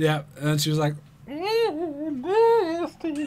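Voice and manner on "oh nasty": put-on very high old woman's voice with a drawn-out "oh". Retelling what the intern said into a pillow, imitating an old woman. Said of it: "Sounds like an old woman".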